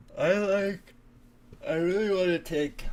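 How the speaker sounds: very high, loud words spoken mid-yawn. Mid-discussion of a trade, the speaker apologizes, yawning while talking. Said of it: "I'm sorry, I'm yawning".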